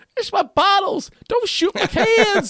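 very high, very slow, dragged-out character voice. Describing a shooting game's bonus round, quote its character in a Big Buck Hunter character voice. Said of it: "that's exactly what the voice was like".

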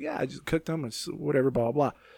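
put-on casual, chill tone. Retelling a man's reply to a reporter, imitating a nonchalant tone. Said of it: "his tone of voice was so nonchalant and chill".

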